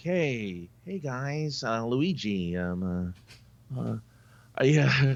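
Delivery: very slow, halting working-class Oklahoma twang. Imagining how Mario would greet the guys, Mario with a blue-collar Oklahoma accent. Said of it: "with a blue collar Oklahoma accent".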